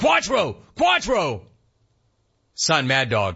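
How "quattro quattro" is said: high, mock yelling. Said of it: "Jeudy started yelling".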